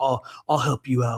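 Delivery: easygoing, offhand, helpful bro manner. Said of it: "that sort of mannerism".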